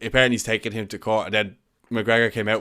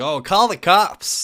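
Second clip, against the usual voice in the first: very high, drawn-out, big, loud put-on American accent; 9 semitones higher, 7 dB louder than usual. Retelling a man's video mocking someone, quoting him in a big American voice. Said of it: "in a big American voice".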